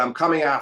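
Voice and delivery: ordinary talk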